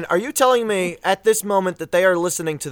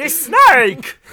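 high, loud put-on cartoon villain shout. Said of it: "Yu-Gi-Oh! Abridged impressions".

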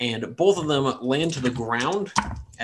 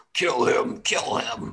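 slow, pig-like goblin squealing voice. Narrating the game, the speaker voices a creature yelling out, in a piggy voice. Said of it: "but in a very like piggy way".

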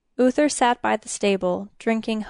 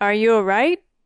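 slurred speech, slurring partly controlled, louder; 6 dB louder than usual. Narrator reads Uther asking the sobbing princess if she is all right, slurred speech. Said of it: "trying to control his slurred speech".

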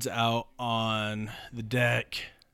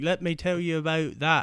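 bad fake English accent, pitched up; 6 semitones higher than usual. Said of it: "fake your accent at the same time".

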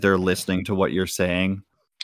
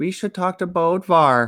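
put-on tiny, very high, small child's voice; 10 semitones higher than usual. Narrator voicing a young child speaking up from the back, small child's voice. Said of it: "You hear a small voice in the back says".

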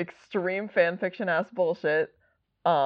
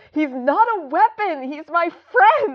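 very high-pitched, loud, all-out yell; 11 semitones higher, 6 dB louder than usual. Recapping a story, the speaker acts out a character's reply, retelling a character's yell. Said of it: "And John just yells".

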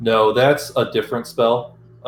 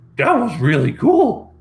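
bad cartoon dog voice, pitched very high; 11 semitones higher, 4 dB louder than usual. Game master voices a creature speaking into the players' heads; shitty Scooby-Doo impression. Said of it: "that really shitty Scooby-Doo impression".

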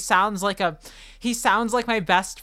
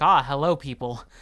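deep, sultry wolf voice, much lower; 5 semitones lower than usual. Retelling the moment a wolf first spoke to the group, Fenris Wolf's deep sultry voice. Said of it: "This wolf's got a deep, sultry voice".

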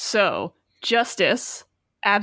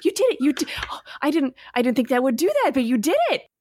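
excited character voice, pitched higher; 5 semitones higher than usual. Narrating Minerva running over after the party's great shot, excited Minerva voice. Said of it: "hopping excitedly around".

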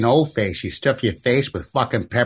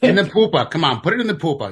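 put-on high-pitched New England accent; 7 semitones higher than usual. Speaker joining friends in a bit mocking an accent, new england accent. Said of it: "with New England accents".

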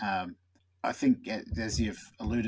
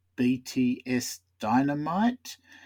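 rising, lifted intonation on Dynamite; 4 semitones higher, 5 dB louder than usual. Reading BTS Dynamite out as when first reading it: questioning rise on BTS Dynamite. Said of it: "the questioning inflection out of my voice there".

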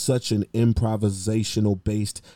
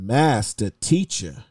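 mock loud calling out. Retelling how an elder called out as he walked away: imitating a loud call. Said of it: "very loudly says".

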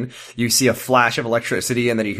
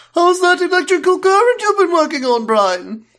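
put-on cartoon baby voice, higher and louder; 6 dB louder than usual. Joking with friends, playing a cartoon baby: Stewie Griffin voice. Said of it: "it's me, Stewie Griffin".

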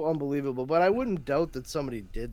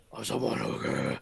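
put-on raspy superhero voice, lower; 12 semitones lower, 3 dB quieter than usual. Mocking how Batman talks in Batman Begins: mocking Batman voice. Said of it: "He sounds like he skipped a nebulizer treatment".

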